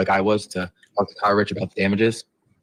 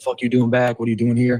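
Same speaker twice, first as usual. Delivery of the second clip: put-on screaming yell, higher pitch; 4 semitones higher than usual. Recounting how a large individual confronted them on arrival; retelling a scream. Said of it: "started screaming, yelling at me".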